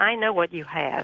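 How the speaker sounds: ordinary talk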